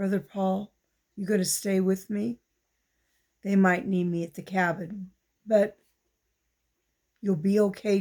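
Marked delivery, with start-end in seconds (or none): 0.0-2.4 whispering hoarsely. Narrator reading D J's words to Brother Paul: hoarse whisper. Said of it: "D J whispered hoarsely".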